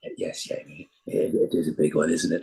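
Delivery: breathy voice, breathed out, almost a whisper. Retelling a private gag done in a Doctor voice: Patrick Troughton voice. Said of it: "I do Patrick's voice".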